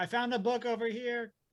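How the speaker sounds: shouting. Yelling in character after getting lost in a library: yelling. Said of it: "I'm just yelling".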